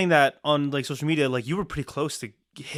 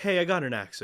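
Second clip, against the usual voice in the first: ordinary talk, nothing marked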